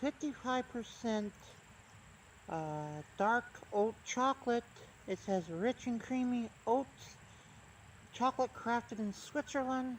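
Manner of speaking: speaking with swollen mouth. Reading a chocolate label aloud, speaking with a swollen mouth. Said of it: "My mouth is swelled up a little bit".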